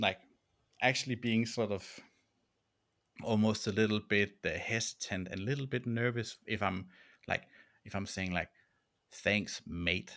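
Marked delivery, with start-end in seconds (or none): 9.2-10.1 put-on Australian accent, lower pitch. Quoting own habit of saying thanks: put-on Aussie accent. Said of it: "putting on my Aussie version of myself".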